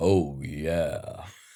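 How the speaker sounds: very deep, drawn-out voice, dropped as low as possible. Host comparing a date's arrival to the Kool-Aid Man, deep Kool-Aid Man voice. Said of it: "I wonder how deep I can go".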